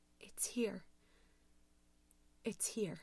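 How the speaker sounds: hushed, low, somber whisper. Reading a horror story, a frozen woman speaks into the phone: low, somber voice. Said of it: "spoke in a low, somber voice".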